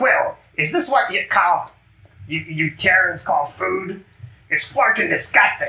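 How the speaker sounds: small, high-pitched, grouchy, complaining voice. Describing what Cap hears as you get close, in a little grumpy voice. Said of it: "this little grumpy voice saying".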